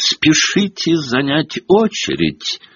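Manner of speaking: high-pitched shout at the top of the lungs. Malfoy calls out to the students filling the courtyard: yelling at the top of his voice. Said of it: "надрывал глотку Малфой".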